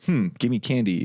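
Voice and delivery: ordinary talk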